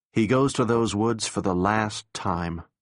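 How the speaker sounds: plain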